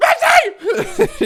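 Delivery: very high, shrill, yelled calling voice. Retelling how grandma yelled the cat's name at the door, imitating grandma yelling cat's name. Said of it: "She would just yell the cat's name".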